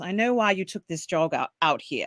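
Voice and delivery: put-on British accent across the whole line. Retelling a scene where someone approaches a newcomer, in a British accent. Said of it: "they have to say in a British accent".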